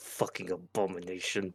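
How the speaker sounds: barely audible, quiet, jaw clenched, through gritted teeth. Voicing Terry glaring at a woman: through gritted teeth. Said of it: "Terry just glares at her and grits his teeth".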